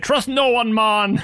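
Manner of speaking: terrible fake Jamaican accent. Retelling a comedic line from an episode: imitating a terrible Jamaican accent. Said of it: "a terrible Jamaican accent and play it for comedy".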